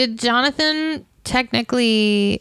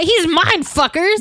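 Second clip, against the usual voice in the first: furious, fuming outburst, higher in pitch; 7 semitones higher, 3 dB louder than usual. Imitating Dracula catching others with his brides: imitating an angry Dracula. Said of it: "he gets so mad".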